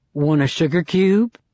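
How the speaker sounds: low, seductive, alluring, inviting voice. A man pours cream in the narrator's cup and asks, in a seductive voice.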